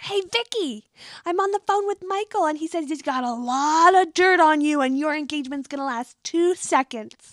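very loud, high-pitched holler. Retelling what Kelly yelled across to Vicky: imitating Kelly yelling. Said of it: "Kelly just yells over".

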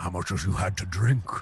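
soft whisper. Character hugging a tipsy man, whispering in his ear. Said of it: "I'm like whispering his ear".

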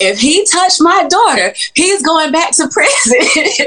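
very high shrill yell. Recounting Mom coming out about the uncle, retelling Mom yelling. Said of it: "my mom starts yelling".

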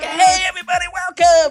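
high, loud, overexcited mock host voice.

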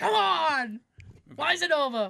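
high, loud, angry tone. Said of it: "He's just angry".

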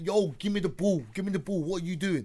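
acted demanding, insistent tone of voice. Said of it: "K D's clapping his hand like".

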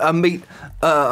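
ordinary talk, nothing marked

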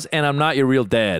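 ordinary talk, nothing marked

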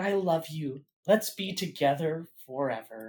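whisper. Retelling a scene where a character whispers: imitating a whisper.

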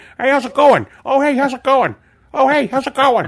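very high, loud, belted, repeated. Retelling how a friend imitates a cool guy greeting him: imitating Todd. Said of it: "Rob is still happy to do impressions of Todd".

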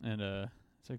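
usual speaking voice

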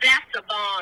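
boastful, super proud, know-it-all tone. Retelling a friend answering a police officer's question: imitating Joe saying it super proud. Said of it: "And he said it super proud".

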